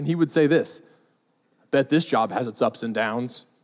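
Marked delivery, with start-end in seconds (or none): 1.7-3.4 flat, very low deadpan, acted out. Retelling a line a man repeated every week, imitating a deadpan delivery. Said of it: "make this deadpan quote".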